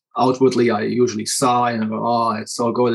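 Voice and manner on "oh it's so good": ordinary talk, nothing marked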